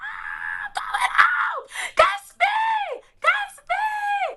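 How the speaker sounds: joyful, ecstatic screaming. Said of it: "I'm screaming".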